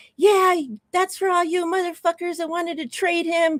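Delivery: shrill, very high screaming. Retelling watching a sack on TV: retelling his own screaming. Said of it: "I'm screaming".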